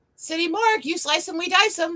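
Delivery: put-on bright, high, chipper phone voice. Answering a spam call, the speaker greets the caller in a put-on chipper voice. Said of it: "I put on my ch- my most chipper voice and went".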